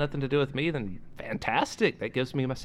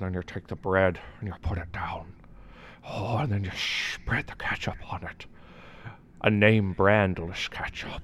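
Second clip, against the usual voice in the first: put-on seductive, sultry, sensual voice; 6 semitones lower than usual. Retelling someone explaining a process, in a put-on sensual voice. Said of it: "in the most sensual voice any of our listeners could possibly imagine".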